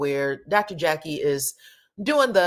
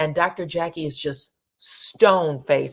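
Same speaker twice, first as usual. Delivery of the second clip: normal talking voice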